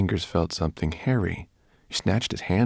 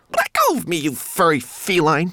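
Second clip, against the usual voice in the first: very high shrill squeal, loud and swooping; 11 semitones higher, 5 dB louder than usual. Narrating a story, a homunculus held tight by the brownie girl protests, squealing. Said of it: "squealed Twiglet".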